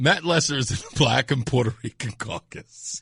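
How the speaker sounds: talking through laughter. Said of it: "but I'm laughing".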